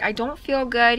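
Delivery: ordinary talk, nothing marked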